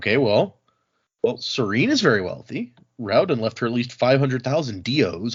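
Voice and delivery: ordinary delivery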